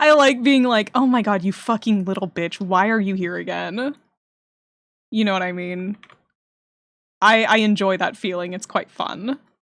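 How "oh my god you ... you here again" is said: mock annoyed outburst. Acting out own reaction to a disliked character: acting out own annoyance. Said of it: "I like how annoyed I get at him".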